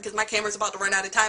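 very fast, rushed speech.

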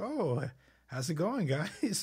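mock-nervous voice. Recounting an awkward moment, you replay what you said to some people behind you, acting out your past nervousness. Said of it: "firmly but politely goes".

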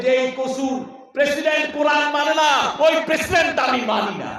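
roaring like a lion.

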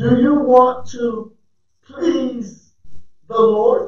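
very slow, halting, broken into pieces. Asking listeners a question, repeating it on purpose, saying it slowly. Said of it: "I'm saying this slow".

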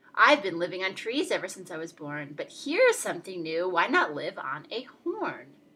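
ordinary delivery

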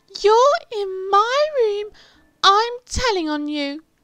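shrill, very high, loud shriek at top pitch. Reading a story aloud, Peter finds Henry in his room: shrieking. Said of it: "shrieked Peter".

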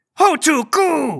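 high, slow, accusing little creature cry.

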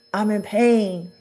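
plain

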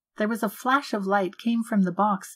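ordinary delivery

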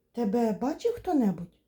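frightened, anxious, fearful voice. A father questions his son who just climbed in through the window, frightened question. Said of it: "злякано запитав пан Пляшкер".

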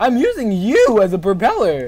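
salesman voice, talking like a sales pitch. Playing a game with a friend, saying it in a salesman voice. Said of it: "Why do you say that like a salesman?".

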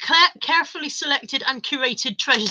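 ordinary delivery

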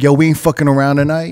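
ordinary delivery

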